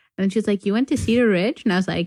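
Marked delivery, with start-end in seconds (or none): 0.7-1.6 question-like rising inflection ending on Ridge. Retelling a woman on the phone asking about the speaker's school, rising question-like intonation. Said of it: "they say everything like it's a question".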